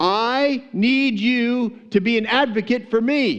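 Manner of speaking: very slow, high, stretched-out yell. Retelling the widow yelling even louder at the judge: imitating louder yelling. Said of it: "she starts yelling even louder".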